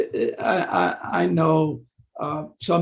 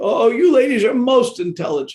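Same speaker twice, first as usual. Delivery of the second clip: raised, pitched-up, sarcastic mock tone; 8 semitones higher, 7 dB louder than usual. Showing an example of unhealthy sarcasm toward a lady: sarcastic. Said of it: "That would be sarcasm".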